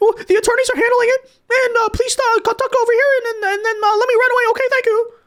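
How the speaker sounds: rapid, high-pitched babbling. Mocking an official's reply to reporters' questions: imitating talking really fast. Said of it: "starts talking really fast".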